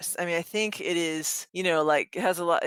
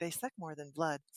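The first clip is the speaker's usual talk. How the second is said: very soft, hushed, mechanical robot voice; 12 dB quieter than usual. Retelling what the phone assistant answered: Google robot voice. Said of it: "in her robot voice say".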